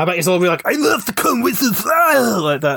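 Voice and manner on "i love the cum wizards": very high, slow, put-on Austrian action-hero accent. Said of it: "don't tell him I did that impression".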